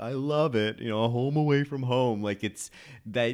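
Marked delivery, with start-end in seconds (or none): 0.0-2.2 put-on character inflection, pitched higher. Imitating how she delivers a line in a scene: Eeyore voice. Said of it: "that Eeyore voice".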